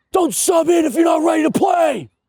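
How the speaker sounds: mock old man screaming yell, pitched very high. Retelling grown men screaming during a pickup hockey game: imitating old men screaming.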